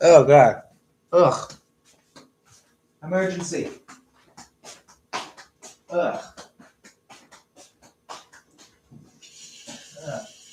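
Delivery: high, grossed-out, disgusted groaning. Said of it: "resin got in my mouth and it's nasty".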